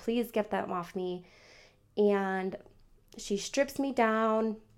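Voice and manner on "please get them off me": ordinary talk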